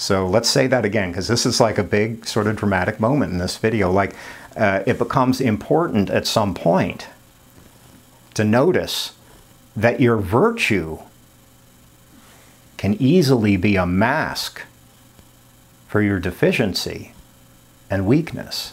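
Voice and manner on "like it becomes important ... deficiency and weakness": very slow, halting, broken into pieces delivery. Repeating a key point to viewers of the video; saying it really slowly. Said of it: "saying it really slowly".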